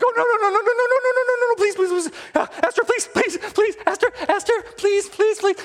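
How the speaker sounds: put-on very high, frantic, panicked pleading. Retelling a Bible story, voicing Haman begging Esther: imitating panicked pleading. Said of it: "here's Haman freaking out. Freaking out".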